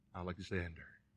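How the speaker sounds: very faint, barely audible half-whisper. Retelling how the young man gave his name to the king: retelling a half-whisper. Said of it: "this young man just whispered".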